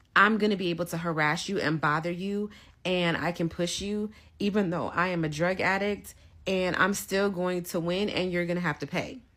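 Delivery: ordinary delivery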